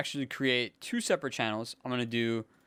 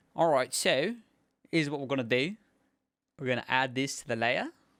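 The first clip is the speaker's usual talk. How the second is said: fake accent, half British and half Australian. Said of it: "my bad accent".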